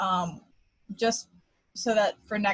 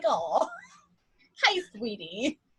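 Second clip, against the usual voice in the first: put-on sweet, doting old-lady voice, high and sing-song; 5 semitones higher, 4 dB quieter than usual. Joking about two older women greeting each other: imitating sweet older women. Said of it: "older women just like".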